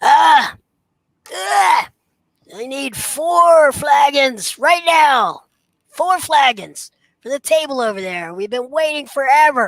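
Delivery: very high, haughty, arrogant, shrill voice. Voicing an arrogant young patron pushing through and demanding flagons: arrogant voice. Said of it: "very arrogant".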